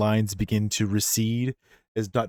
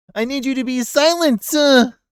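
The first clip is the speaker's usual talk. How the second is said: shouting, very high-pitched and drawn out; 8 dB louder than usual. Voicing the doctor shouting back at Jack and the others: shouting back. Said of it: "he shouts back behind him to Jack".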